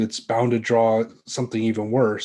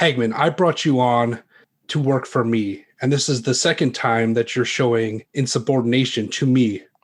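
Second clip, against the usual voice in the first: very angry, furious, harsh scolding tone. A game narrator voicing a boss scolding the player's character, very angry. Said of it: "looks at you very angrily and says".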